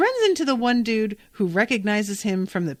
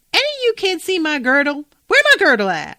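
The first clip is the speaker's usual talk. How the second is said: woman's voice, high, loud and swooping; 8 semitones higher, 6 dB louder than usual.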